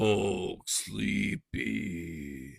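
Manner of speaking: monster voice, lumbering. Retelling a Hulk movie scene, acting out the Hulk growing sleepy: imitating the Hulk. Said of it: "And then he'd be all like".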